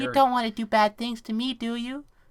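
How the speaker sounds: high, fake innocent little voice. Joking to the other speaker about bad people online: put-on innocent voice. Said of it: "Listen to my innocent voice".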